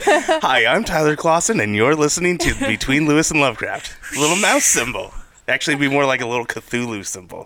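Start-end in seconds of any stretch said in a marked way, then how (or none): 0.0-3.9 put-on swooping, pitch-swinging kids' TV host voice. Podcast host introducing the show, Disney Channel host voice. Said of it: "I feel like I'm on the Disney Channel".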